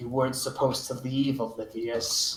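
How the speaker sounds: deep, very low voice. Voicing a woman character heard in a player's head, staring daggers: her voice in your head. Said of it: "and you hear in your head, in her voice".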